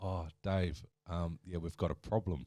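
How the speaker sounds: ordinary delivery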